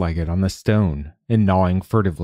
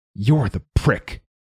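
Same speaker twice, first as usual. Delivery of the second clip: hissed, resentful voice; 4 semitones higher than usual. Hart, not one to let an insult go unpaid, hissing. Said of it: "Hart hissed".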